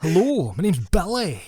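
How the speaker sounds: put-on Scottish accent. After asking for reviews that praise the accent, introduce yourself in a put-on accent like Mel Gibson. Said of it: "It sounds like Mel Gibson".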